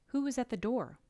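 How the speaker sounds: falling tune at the end on door. Teaching question intonation, demonstrating a WH question with falling pitch at the end. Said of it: "we drop our pitch at the end of the question".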